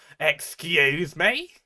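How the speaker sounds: put-on British accent on "excuse me". Retelling the reaction of someone who was raided, put-on British accent. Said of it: "I don't know why I'm giving them a British accent".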